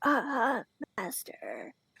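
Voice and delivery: small, lifted, swooping pitch. You act out the deaf hero of the show as Frollo comes in, in a Quasimodo voice. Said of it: "this like Quasimodo voice".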